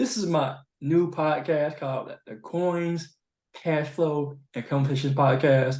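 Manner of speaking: slow, deliberate, carefully spelled-out announcing. Host introducing the new podcast name, slow and deliberate. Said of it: "I had to say it slowly".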